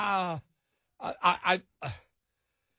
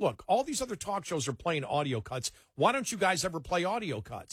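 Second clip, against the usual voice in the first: ordinary delivery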